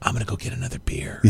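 whispered, sneaky aside. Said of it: "we were just like".

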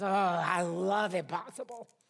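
very slow, drawn-out, loud growl. Retelling a sick woman's reply to doctors calling her incurable, imitating a growl. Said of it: "she just growled".

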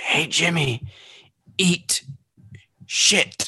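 gasping, dying voice on last breath. Playing a character turning to Jimmy with a dying breath. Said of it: "in my dying breath, I say".

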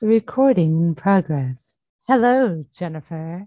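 faintly eerie, low computer voice. Just after recording starts, greeting Jennifer; lightly eerie voice. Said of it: "Lightly eerie voice".

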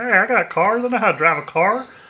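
put-on laid-back folksy country accent. Imitate the fake Paul Walker from Tokyo Drift for the others, in a Country Paul Walker voice. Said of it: "Country Paul Walker".

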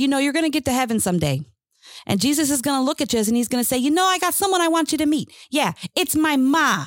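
put-on Chicago accent. Retelling what a woman once said to the speaker: thick South Side Chicago accent. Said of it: "in the thickest Southside Chicago accent".

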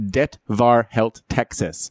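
Norwegian accent and pronunciation. Saying a Norwegian phrase that calls something crazy: Norwegian accent. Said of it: "that was a great, great accent".

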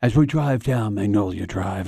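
quiet golf commentator whisper. Imitating a sports announcer opening the Masters: Jim Nantz golf whisper. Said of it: "he does the golf whisper".

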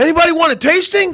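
big, booming, very high call. Retelling a voice calling out from the back, imitating a booming voice. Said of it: "a booming voice comes from the back".

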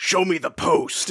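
mock-serious character voice. Recapping a scene where Commissioner Gordon speaks, in a serious Commissioner Gordon impression. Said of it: "in a very serious voice".

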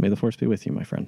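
soft, hushed whisper under the breath. Playing a Jedi who puts a hand on a friend's shoulder, whispering. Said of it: "and just whisper".

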